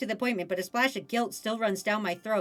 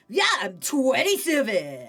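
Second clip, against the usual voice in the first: put-on surfer boy voice, pitch swinging up and down; 4 dB louder than usual. Voicing Ocean answering the interviewer's questions, in an Ocean surfer boy voice. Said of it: "I'm gonna give Ocean like a surfer boy voice".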